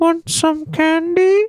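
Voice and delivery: very high, squeaky put-on voice. Showing an impression of a movie soundbite, Predator's Want some candy. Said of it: "me doing an impression of something".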